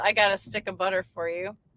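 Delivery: ordinary talk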